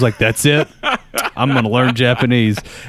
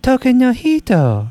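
imitated speech in a much higher voice; 13 semitones higher than usual. Speaker recalls a woman saying a phrase he was learning, mimicking her. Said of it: "So I would try to mimic her".

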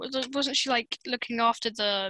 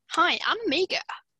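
New Zealand accent, pitched up; 6 semitones higher than usual. Doing an Amiga impression for the others on the show; Amiga impression, Kiwi accent. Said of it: "That's a Kiwi accent".

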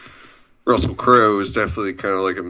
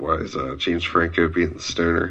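normal talking voice

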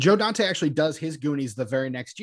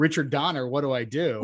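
plain

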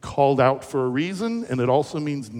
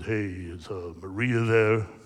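deepest possible bass voice, very deep and slow; 5 semitones lower, 3 dB quieter than usual. Retelling a wrong-number phone call from a caller: imitating a very deep voice. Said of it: "this deepest voice I've ever heard".

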